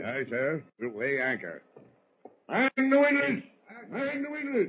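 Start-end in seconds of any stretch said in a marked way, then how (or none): 2.5-4.7 very high, booming, lung-filling shouted bellow. Giving orders to weigh anchor: booming shouted orders. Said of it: "Holy mackerel, what a voice".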